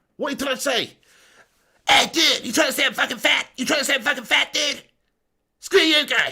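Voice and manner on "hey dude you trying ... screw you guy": high-pitched, bratty, combative cartoon-kid voice. Answering a viewer's comment about his impression, in a Cartman voice. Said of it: "You are good at Cartman".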